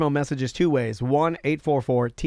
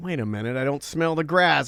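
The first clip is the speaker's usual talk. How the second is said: usual speaking voice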